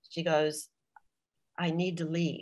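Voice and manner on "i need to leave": mimicked whisper, quieter and slower. Retelling what she whispered to him over dinner, imitating her whisper. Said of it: "She said to me in a whisper".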